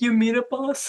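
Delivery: dejected, wistful, sad, forlorn tone. Retelling how a spirit looked at the speaker before wandering off: imitating a sad spirit. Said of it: "about to sadly wander off in the distance".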